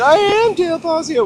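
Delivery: put-on loud, slow Massachusetts accent. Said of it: "with her Methuen accent".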